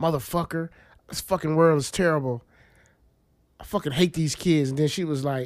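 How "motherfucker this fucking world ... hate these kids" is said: normal talking voice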